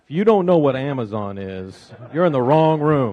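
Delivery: loud, swooping, tongue-in-cheek sarcastic tone. Guest answering an interviewer's question about Amazon, sarcastic. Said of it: "I'm being sarcastic".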